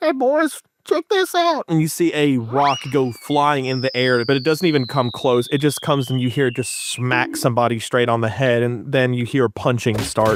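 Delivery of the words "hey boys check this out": far-off, very muffled, very high voice. Game master voicing someone heard from inside the town: very muffled voice. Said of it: "like a very muffled".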